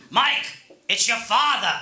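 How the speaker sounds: put-on grumbly, grouchy old-school New York accent. Quoting the voicemail his father left him, imitating dad's New York accent. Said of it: "he has an accent".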